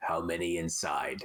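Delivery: put-on gruff, flat, low soldier voice in monotone. Retelling how someone will question a soldier in german, gruff monotone voice. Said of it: "put on like a really gruff monotone voice".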